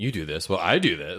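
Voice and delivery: put-on childish voice. Mocking how a neighbor answered: imitating a mimicking kid. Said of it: "It's like a kid mimicking".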